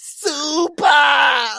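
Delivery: shrill, very loud anime-style shout, full blast. Pointing out that the other speaker sounded like Franky from One Piece: Franky from One Piece voice. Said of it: "you said it like Frankie from One Piece".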